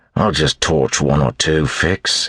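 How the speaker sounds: muttering. After being told it is not the time, a man answers: muttered reply. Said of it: "he muttered back".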